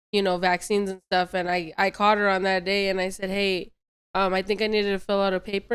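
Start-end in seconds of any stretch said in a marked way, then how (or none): none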